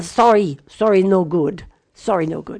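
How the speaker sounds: very broken put-on Persian accent, broken English. Quoting what your maternal grandfather used to say, imitating a very broken Persian accent. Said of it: "in his very broken Persian accent".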